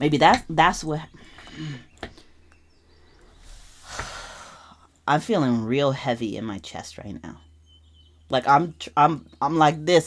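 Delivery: struggling to stay composed, holding back tears. Reflecting on family hurt, trying to hold it together. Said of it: "I'm trying to hold it together because I'm starting to get emotional".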